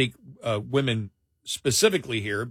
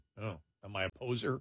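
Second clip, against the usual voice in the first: soft, low, self-conscious, worried, sheepish tone. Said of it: "and went".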